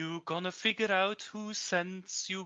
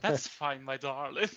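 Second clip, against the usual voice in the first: put-on charming voice; 5 semitones lower than usual. Replying to someone who is fairly new: charming voice. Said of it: "I changed my voice again to my charming self".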